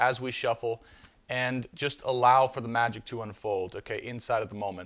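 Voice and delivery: ordinary talk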